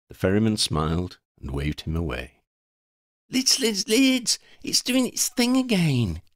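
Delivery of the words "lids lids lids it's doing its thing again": very high-pitched babble, words tumbling over each other. Freddy, shaking Lydia awake to show her something, babbling. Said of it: "he babbled".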